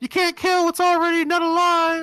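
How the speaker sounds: put-on shrill, very high, very loud, drawn-out boy's yell. Voicing a young boy down the street: young boy yelling. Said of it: "a young boy down the street yells".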